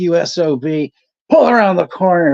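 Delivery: hollered, high-pitched voice. Retelling what a man shouted after getting out of his car, retelling a yell. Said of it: "he's yelling like".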